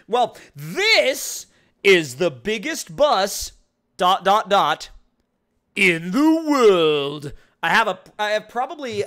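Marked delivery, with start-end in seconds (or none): 0.1-7.3 loud, very slow, grand booming announcement, stretched out. Reading out a car on screen: terrible Jeremy Clarkson impression. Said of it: "I probably do a terrible impression of that".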